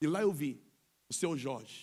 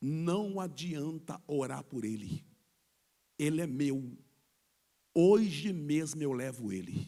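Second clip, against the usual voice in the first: slow, hoarse, rasping voice; 2 semitones lower than usual. Retelling what a voice said through a man in a coma, in a hoarse voice. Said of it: "uma voz rouca sai pela boca dele dizendo".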